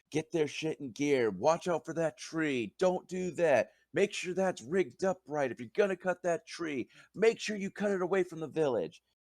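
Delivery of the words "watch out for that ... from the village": thundering, booming, barked delivery. Narrating a scene to the listener, voicing a man barking orders at workers. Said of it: "He is barking orders".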